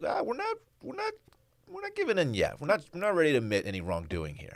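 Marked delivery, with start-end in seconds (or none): 0.0-2.6 very high, squeaky, stubborn-sounding voice. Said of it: "Cinnamon Toast Crunch is like".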